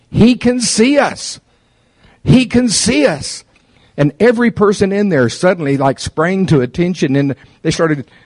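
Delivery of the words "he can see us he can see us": very slow, high, drawn-out, top-of-the-lungs screaming. Retelling someone running for cover on being seen, retelling someone screaming. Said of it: "screaming at the top of her lungs".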